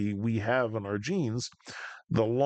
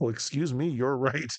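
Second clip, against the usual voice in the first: put-on apologetic chatbot voice; 2 semitones higher than usual. Acting out a chat about buggy code: imitating ChatGPT. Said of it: "it's like talking to Chat G P T".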